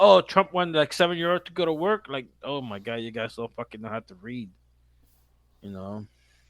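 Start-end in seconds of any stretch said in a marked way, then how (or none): 0.0-2.1 high, loud, whiny, crying, wailing voice. Retelling how people complained about trump: imitating people whining. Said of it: "people were crying like".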